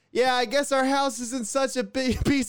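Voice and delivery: high, shouted yell. Retelling standing on top of the house, acting out yelling at him. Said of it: "standing on top of our house yelling at him".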